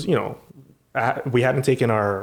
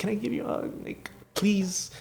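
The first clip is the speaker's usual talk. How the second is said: mock shy, nervous, breathy, pleading begging tone; 10 semitones higher, 9 dB quieter than usual. Retelling a fan asking for a hug: imitating a nervous fan. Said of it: "she was so nervous".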